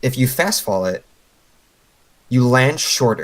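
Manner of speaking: slow, deliberate delivery. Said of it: "I'm gonna say this slowly".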